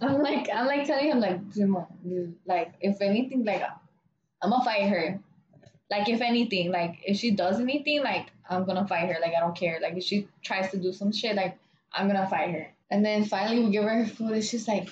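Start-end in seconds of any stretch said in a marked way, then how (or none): none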